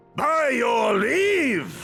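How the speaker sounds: powerful, thunderous, loud booming delivery. Character taking leave after deciding to head back, in a booming voice. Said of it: "that voice could fell a gigas".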